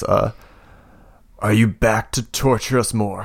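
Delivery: slow, croaky, croaking voice. Narrating a scene, voicing an unseen voice in the darkness, croaking voice. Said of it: "You hear a voice croak from in the darkness".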